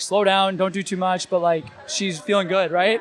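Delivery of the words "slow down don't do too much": ordinary talk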